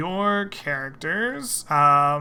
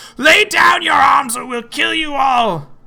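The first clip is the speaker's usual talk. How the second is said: shrill, very high, very loud screaming goblin voice; 11 semitones higher, 8 dB louder than usual. Voicing goblins threatening the party in a cave: goblins shouting. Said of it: "clearly shout".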